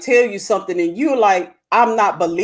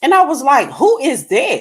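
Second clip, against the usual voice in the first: plain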